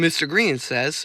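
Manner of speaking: ordinary talk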